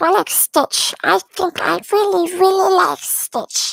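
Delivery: loud, very high, bad alien voice. Streamer chatting with viewers about pets, not very good Stitch voice. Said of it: "My Stitch voice is not very good".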